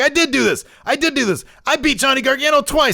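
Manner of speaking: play-acted, very high, pumped-up boastful voice. Retelling a champion's reply to Kevin Owens: imitating hyped-up Leon Ruff. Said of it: "Ruff's getting all, all hyped up".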